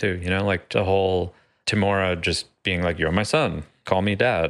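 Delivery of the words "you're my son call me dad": ordinary talk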